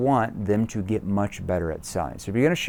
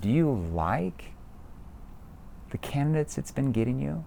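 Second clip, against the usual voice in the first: soft, doubtful, worried, skeptical, concerned tone; 3 semitones higher, 7 dB quieter than usual. Demonstrating tone with a sample question to a listener, concerned, skeptical tone. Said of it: "My tone sounds concerned, and it sounds skeptical".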